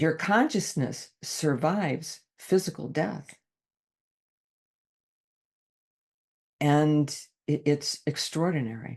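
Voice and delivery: choked up, emotion welling, voice catching. Speaking in a conversation, getting choked up mid-thought, choked up. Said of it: "I'm getting choked up with this".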